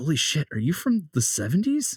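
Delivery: confiding stage whisper, fully voiced. Narrator voicing Merlin leaning in to one of the group, Merlin half-whispering. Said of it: "he whispers into Mason's ear".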